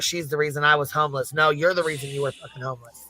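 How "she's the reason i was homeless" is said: ordinary delivery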